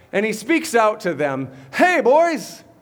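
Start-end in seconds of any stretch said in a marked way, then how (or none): 1.8-2.6 put-on seasoned, wise old sea fisherman voice. Retelling how he calls out to the fishermen, wise old fisherman voice. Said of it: "he's talking like this wise old fisherman of the sea".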